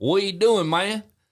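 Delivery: very high, slow, drawn-out country-style drawl. Redoing a friend's greeting when pushed, in a put-on country voice. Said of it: "that's about as country as I can get".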